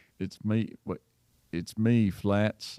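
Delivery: slow, drawn-out put-on country accent attempt. Retrying the character's greeting in an attempted country accent. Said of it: "you don't sound like you're from around here".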